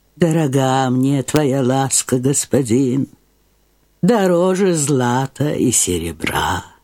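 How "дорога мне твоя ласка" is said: usual speaking voice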